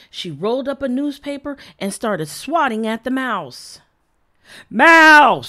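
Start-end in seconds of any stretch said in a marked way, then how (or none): 4.6-5.4 long, very loud, drawn-out yell. Narrator reading the father's cry in a story, yelled. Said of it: "Yelled Dad".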